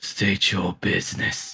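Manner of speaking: weird, glassy, scratchy, icy glass-scraping voice. Describing ice creatures who speak out to you, voicing them: glass-like scratchy ice voice. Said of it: "you hear an almost glass-like um, scratch noise uh, coming from their mouths as they speak out to you in an almost uh, weird tone".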